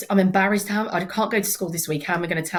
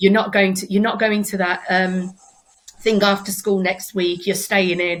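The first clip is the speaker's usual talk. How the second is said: normal talking voice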